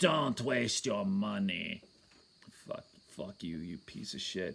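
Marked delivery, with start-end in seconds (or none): 0.0-1.8 slow, drawn-out, harsh put-on German accent. Retelling what a neurologist in Colombia told the speaker, imitating a Nazi-sounding accent. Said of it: "He sounded like a fucking Nazi".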